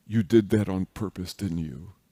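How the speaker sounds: hushed put-on whisper. Telling a story where someone walks over to a teased girl after school, retelling a whisper. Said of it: "walks over to her and whispers".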